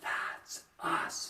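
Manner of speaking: hushed whisper. Leading a call-and-response, modeling the reply the listeners should give, hushed whisper. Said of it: "Make sure it's kind of whispered".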